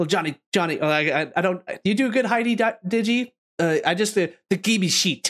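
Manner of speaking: halting, fumbling, with repeated false starts. Retelling what Heidi said to a guest on the show: imitating Heidi. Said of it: "That's my best Heidi impersonation".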